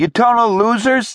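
shrill, very high-pitched yell. A bleeding student yells at two others as a crowd of schoolkids watches, shouted. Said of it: "Townsend shouted at Ethan and Zoe".

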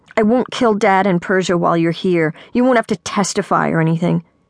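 ordinary delivery

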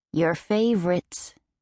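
ordinary delivery

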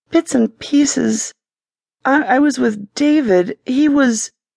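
voice dying away, trailing off and fading out. A woman answers whether she remembers what happened, voice trailing off. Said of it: "Her voice trailed off".

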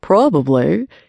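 playful, gently ribbing, half-laughing. A man answers the narrator's embarrassed mumble, teasing. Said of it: "he teased".

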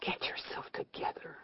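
very quiet, soft, whispered mutter. Kathleen talks to herself in a waiting room, muttering softly. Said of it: "she muttered softly".

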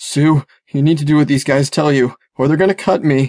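scared, frightened, whimpering, begging tone. Held with a knife under his chin, [name] speaks to Sue, whimpering. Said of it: "[name] whimpered".

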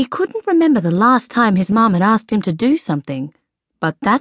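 ordinary delivery

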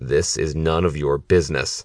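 low threatening voice. The villain faces his challenger at a street showdown; low, threatening voice. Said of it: "in a low, threatening voice".

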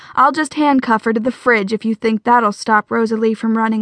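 ordinary delivery, nothing marked

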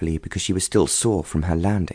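plain reading voice

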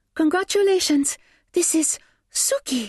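very soft, hushed, breathy. A young woman holding a carrier turns to face them, soft, breathless voice. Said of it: "so softly and so breathlessly".

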